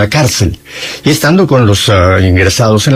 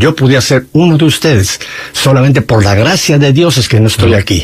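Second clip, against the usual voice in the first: ordinary talk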